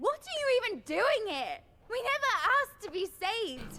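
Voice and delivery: whiny, whining voice. Confronting someone blamed for friends' deaths: whiny voice. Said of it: "What a whiny voice".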